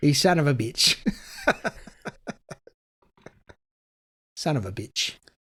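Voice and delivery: put-on Australian accent throughout. Asked to redo the line like an Australian, the speaker tries an Australian accent. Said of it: "Do it like an Australian".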